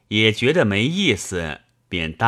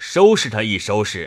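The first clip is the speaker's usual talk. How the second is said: ordinary delivery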